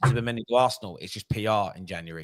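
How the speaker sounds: normal talking voice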